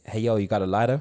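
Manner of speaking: put-on American accent in an old man voice. Retelling a stranger in the smoking area asking for a lighter: imitating an American accent. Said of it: "this American geezer going".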